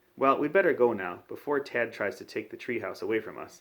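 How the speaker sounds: plain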